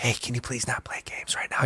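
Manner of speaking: soft, gentle, quiet whisper. Retelling asking a student to stop playing games: imitating own whisper. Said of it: "kinda whisper 'em".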